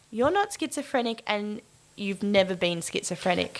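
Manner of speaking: normal talking voice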